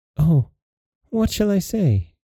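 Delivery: high, afraid, anxious, fearful cry. Narrator reads Beauty answering the beast's marriage question, fearful cry. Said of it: "Cried Beauty, for she was afraid".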